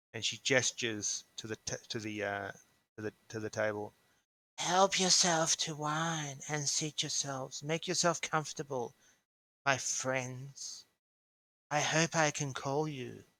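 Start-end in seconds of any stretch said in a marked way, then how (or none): 4.6-13.2 rasping, raspy, dry, parched voice. Narrating to the players, the speaker voices a woman inviting them to sit, raspy, dry voice. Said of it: "You hear her speak in a raspy, dry voice".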